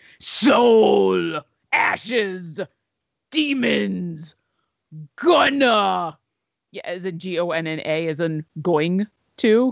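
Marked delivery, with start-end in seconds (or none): 0.2-6.2 heavy metal-style voice, "soul" stretched and drawn out. Host reading out a countdown of words, in his best metal voice. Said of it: "I will use my best metal voice for this".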